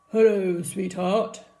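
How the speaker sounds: low, deep voice. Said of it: "a deep voice replied".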